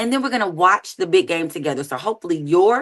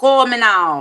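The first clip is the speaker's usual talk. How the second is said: put-on Jamaican accent, said louder; 4 dB louder than usual. Plugging contact info on a show, Cleo Jamaican accent impression. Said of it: "that's your Jamaican accent".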